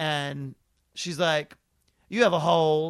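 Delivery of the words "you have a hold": very loud, dismissive, couldn't-care-less voice. Retelling a clerk's words at a license renewal: imitating an eye-rolling, inattentive clerk. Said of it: "the eye-rolling, ... not at all paying attention to you".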